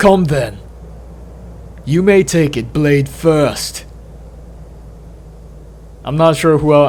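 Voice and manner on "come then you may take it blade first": put-on British accent. Voicing a character's line while telling a story, Benedict Cumberbatch British accent. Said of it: "let me try a British accent".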